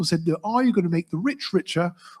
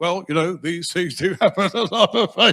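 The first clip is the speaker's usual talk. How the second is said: play-acted words broken up by laughter. Imagining a reply to a condolence, laughing through it: imitating Farage laughing mid-sentence. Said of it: "can't get to the end of a sentence without laughing".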